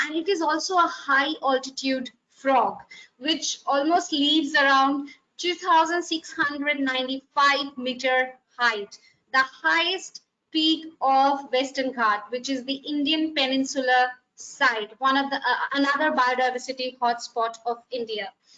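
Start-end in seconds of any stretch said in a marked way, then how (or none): 15.7-18.3 a little faster, rushed delivery. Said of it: "I'm going a little faster".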